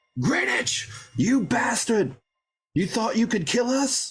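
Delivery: shrill, very high-pitched, ringing yell. A player voicing their character calls out to Greenwich mid-fight, yelling out. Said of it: "I'm going to yell out".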